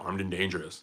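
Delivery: mock calm, very low, flat monotone deadpan. Retelling how a man said the Thunderbolts line: imitating a flat, unscreamed delivery. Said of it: "Like he didn't scream it".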